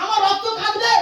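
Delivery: plain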